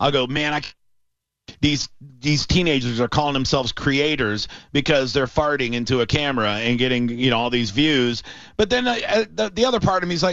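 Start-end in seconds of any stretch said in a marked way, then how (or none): none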